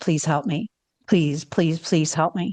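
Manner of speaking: hushed, low, rushed, pleading stage whisper. Retelling how a man half-whispered in her ear, retelling a half-whisper. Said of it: "whispers in my ear and goes".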